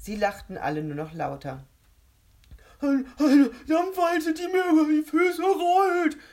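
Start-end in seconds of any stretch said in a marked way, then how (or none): 2.8-6.1 very high, very loud shriek breaking through laughter. One of a group trying to stop laughing answers, shrieking and bursting with mirth. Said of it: "kreischte Grisby und platzte fast vor Heiterkeit".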